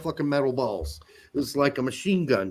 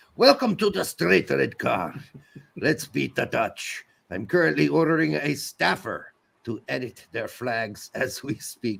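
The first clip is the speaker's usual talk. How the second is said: put-on French accent. Reading out a listener's message as a joke: put-on french accent. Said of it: "French accent makes sense now".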